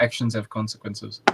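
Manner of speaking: usual speaking voice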